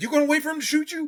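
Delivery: put-on sergeant scream. Retelling a sergeant confronting him after a raid: imitating a sergeant screaming. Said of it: "in my face scream-, screaming at me".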